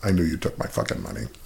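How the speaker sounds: barely audible, very low under-the-breath mutter. Retelling what he said to the man filling his cup, under his breath. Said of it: "I very lowly under my breath said to him".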